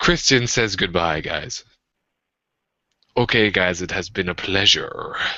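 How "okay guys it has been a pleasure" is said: sultry, sexy put-on Spanish-style accent, laid on thick.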